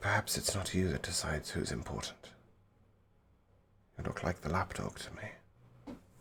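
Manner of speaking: soft, gentle half-whispered words. Speaking in character to her, forcing a wisdom save: gentle half-whisper. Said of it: "as I will whisper gently to her".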